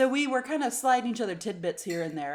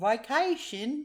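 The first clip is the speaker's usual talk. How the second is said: attempted Australian accent; 4 semitones higher than usual. Asked how a British person would say a word, in an attempted accent that sounds Australian. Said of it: "Was that Australian?".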